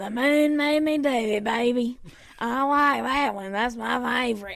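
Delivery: classic raspy smoker's voice. Retelling a very thin woman coming up to the speaker, classic smoker's voice. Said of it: "with her like classic like smoker's voice".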